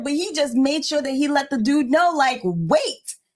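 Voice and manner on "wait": put-on stern, short, firm single word in raised voice. Retelling how her husband stopped a man: imitating husband's raised voice. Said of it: "he does not raise his voice like that at all".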